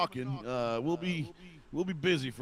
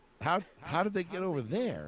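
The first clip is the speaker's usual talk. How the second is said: put-on American southern accent; 4 semitones higher than usual. Voicing Hitler during a D-Day joke: Southern-accented Hitler voice. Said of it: "somehow Hitler sounds Southern right now".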